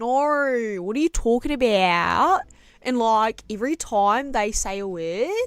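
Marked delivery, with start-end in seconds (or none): 0.0-2.4 exaggerated Australian vowels, louder, slower. A New Zealander showing how Australians go crazy with vowels, exaggerated Australian vowels. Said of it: "Australians really go crazy with the with the vowels".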